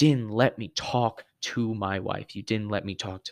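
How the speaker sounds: usual speaking voice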